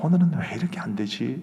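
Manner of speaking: usual speaking voice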